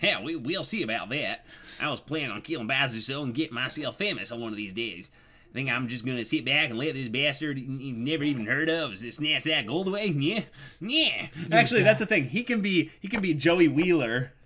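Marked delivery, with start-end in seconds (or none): 0.0-10.1 put-on southern accent. Player going back to his character's southern voice, in a southern accent. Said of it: "I got to go back to that southern voice".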